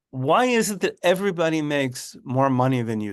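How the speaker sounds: ordinary talk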